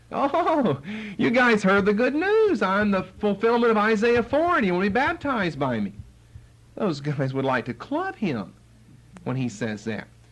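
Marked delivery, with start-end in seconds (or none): 0.1-5.9 very high-pitched, mocking, ironic sarcasm. Acting out his sarcasm toward those who came to be baptized: acting out sarcastic words. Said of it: "irritate them with his sarcasm".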